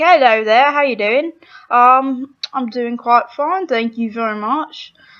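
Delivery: rough, put-on British accent. Demonstrating the accents they use for impressions: rough british accent demo. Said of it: "that may be a little bit rough".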